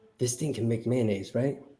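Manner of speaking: hushed, very quiet half-whisper. Asking Rose a quiet question about a jug: half-whispering. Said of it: "and I whisper".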